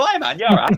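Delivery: voice cracking up into very high squeak. After doing a bat voice for hours, the speaker imitates their voice cracking high. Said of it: "voice went up a few octaves".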